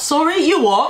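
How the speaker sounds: put-on startled, English accent slipping out. Retelling a reply to a question about the beans: English accent. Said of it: "my English accent came back out".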